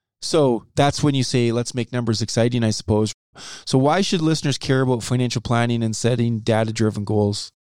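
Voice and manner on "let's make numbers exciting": usual speaking voice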